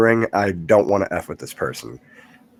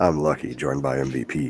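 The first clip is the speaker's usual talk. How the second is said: very deep, low, soft voice; 7 semitones lower, 7 dB quieter than usual. Opening the show and introducing who joins them, deep allergy voice. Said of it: "I'm doing this deep voice because of my allergies".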